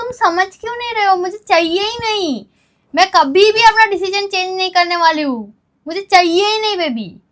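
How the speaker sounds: insistent, heated protest. Refusing to have a baby during an argument, shouting. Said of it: "ना चिल्ला के क्यों बोल रही हो?".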